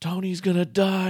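high-pitched, alarmed, yelling. Retelling how the area supervisor yelled across the shop: imitating someone yelling. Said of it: "he just starts yelling from the side of the shop".

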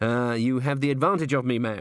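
ordinary talk

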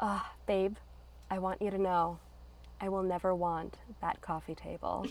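breathy, sultry, soft, sexy whispered purr. Retelling Marie's line from the movie: soft, sexy voice. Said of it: "that soft, sexy voice".

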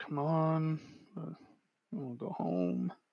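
very hushed, slow, drawn-out mumble under the breath. Narrating a return to the cell, voice the guard behind you muttering under his breath. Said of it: "kind of mutter under his breath".

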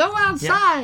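very high, squeaky, tiny put-on puppet voice. Parent recalls a child answering a request to help with the dogs: little Muppet voice. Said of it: "in his little Muppet voice".

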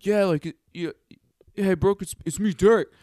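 stumbling, stammered, high and loud. Retelling a guy greeting a girl: imitating Derek. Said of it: "he was just like".

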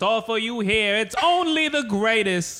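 put-on old-timey 1950s New York accent. Doing a quick bit, putting on a 1950s New York accent. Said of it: "That's my best 1950s New York".

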